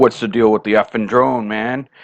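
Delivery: put-on rude tone with an attitude. Retelling how an angry stranger confronted him: imitating someone with an attitude. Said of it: "he starts with an attitude".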